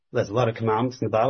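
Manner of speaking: rushed, very fast delivery.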